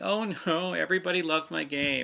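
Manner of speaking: mock blubbering, high, drawn-out boo-hoo crying voice. Imitating a game developer mock crying about praise: imitating a developer crying. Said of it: "a developer crying".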